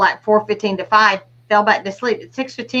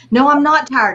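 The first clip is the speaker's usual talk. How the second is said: mock, mild half-shouted delivery; 4 semitones higher than usual. Retelling arguing with own mind while walking down the street: imitating own yelling. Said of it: "I'm yelling at my mind".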